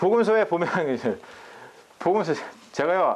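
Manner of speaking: stumbling, halting speech. A pastor explaining the Gospels gets stuck on his words, stuttering. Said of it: "이렇게 말을 더듬어요".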